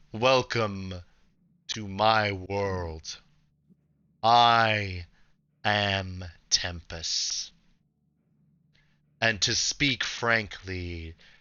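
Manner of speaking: imposing, grand deity voice with drawn-out I. Game master voicing a massive being greeting the players, booming Tempest voice. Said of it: "this comes from a booming voice that fills all your heads".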